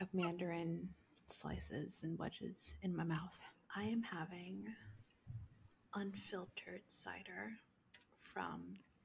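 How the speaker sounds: near-silent, hushed, very quiet whisper. Tasting a cider on a nighttime episode, before being asked why: whispering. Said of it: "why you're whispering yet".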